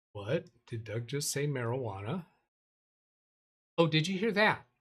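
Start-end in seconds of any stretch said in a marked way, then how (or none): 0.6-2.2 gentle, softened, quiet, softer voice. Reacting to a joke about the mic, in a softer voice. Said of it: "I just said that in a softer voice".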